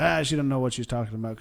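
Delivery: ordinary talk, nothing marked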